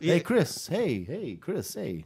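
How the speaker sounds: put-on calm, slow, called-out voice with English accent. Showing how the speaker's english dad really says chris: imitating a dad with an english accent. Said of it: "a totally English guy".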